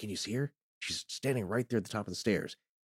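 put-on whisper. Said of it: "kind of whispering".

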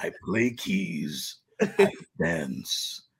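slow, deliberate superhero voice. Joking with friends, doing a Batman voice. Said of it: "You do Batman too?".

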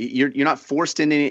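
ordinary talk

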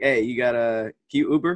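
offhand, breezy, super casual, low-key and low. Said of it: "just super casual".

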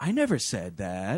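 put-on teenage-sounding low voice. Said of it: "a teenager just lying to their parents".

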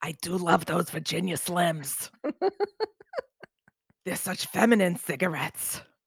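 slightly scratchy voice. Hosting a show, sounding a little scratchy. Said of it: "I'm sounding a little scratchy".

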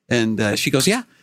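ordinary talk

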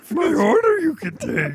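put-on wise alien master voice. Answering a waiter's question in the Yoda joke: Yoda voice. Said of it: "talk like Yoda".

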